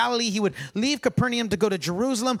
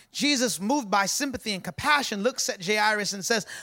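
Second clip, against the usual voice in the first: ordinary talk, nothing marked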